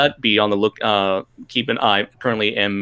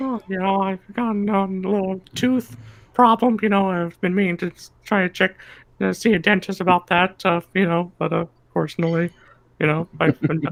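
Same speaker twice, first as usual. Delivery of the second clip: very high, tiny cartoon baby narwhal voice; 10 semitones higher than usual. Voicing a baby narwhal puppet with a tooth problem: Beluga the Baby Narwhal voice. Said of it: "[name] is the new voice of, uh, Beluga the Baby Narwhal".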